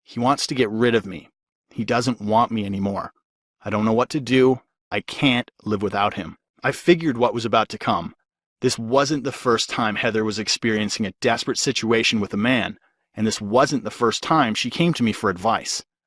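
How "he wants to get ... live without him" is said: put-on frail, trembling, weak, shaky delivery. Retelling a tearful friend's words at the door: imitating Heather's weak, shaky voice. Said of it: "In a very weak and shaky voice".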